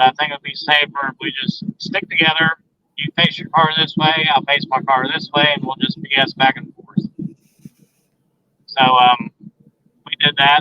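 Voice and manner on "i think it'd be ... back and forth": ordinary talk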